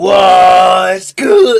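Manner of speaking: voice cracking. Greeting YouTube viewers at the start of a reaction video, voice cracking. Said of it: "that voice crack was fucking crazy".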